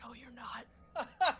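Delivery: soft, hushed half-whisper, slightly high. Voicing Calamity half-whispering a reply to him: half-whispering. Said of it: "Calamity whispers to him".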